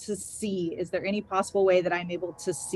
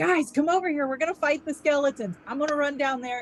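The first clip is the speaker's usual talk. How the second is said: high, loud rallying yell, shouting as loud as possible; 8 semitones higher than usual. Calling companions over to fight skeletons: yelling as loud as possible. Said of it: "I'm gonna yell as loud as I can".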